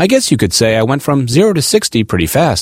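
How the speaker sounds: normal talking voice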